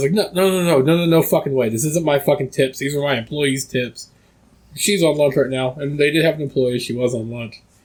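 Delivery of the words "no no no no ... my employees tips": play-acted, furious, pissed-off dad voice. Retelling a father refusing to hand over the employees' tips: imitating an angry father. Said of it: "my dad was fucking pissed".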